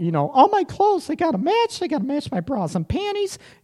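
very high mock woman's voice. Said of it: "I almost hurt myself with that voice like I got kicked in the nuts".

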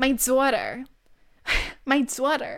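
Long Island accent on daughter. Show the exaggerated word you hear in your head, in a Long Island mom accent. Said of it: "what a Long Island mom sounds like".

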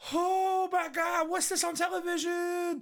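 very high, yelled-out exclamation. Recapping a scene where Gohan is studying, imitating Videl yelling. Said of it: "why are you yelling?".

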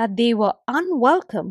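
ordinary delivery

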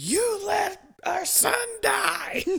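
acted, shrill, very high, enraged and furious. Retelling how the girlfriend came over furious, imitating her angry outburst. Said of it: "just pissed, angry as hell".

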